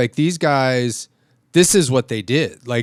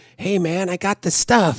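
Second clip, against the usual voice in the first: put-on higher, mimicked small child voice; 5 semitones higher than usual. Retelling an overheard line by a four-year-old son: imitating four-year-old son. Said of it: "a four-year-old going".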